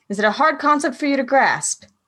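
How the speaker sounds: condescending scolding tone.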